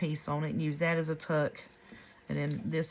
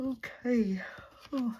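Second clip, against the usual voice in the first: words spoken through a high yawn; 8 semitones higher than usual. Speaker up since early morning, making a journal, yawning. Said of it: "I'm sorry I'm yawning".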